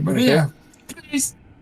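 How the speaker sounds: frantic, desperate, very high, loud voice. Voicing the doctor again, rattling the trapdoor: desperate pleading. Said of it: "He's like".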